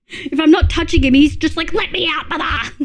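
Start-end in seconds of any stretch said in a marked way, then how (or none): 1.7-2.8 mock insistent, demanding scream. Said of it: "screams at me to be let in".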